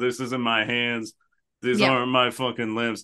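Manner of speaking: ordinary talk, nothing marked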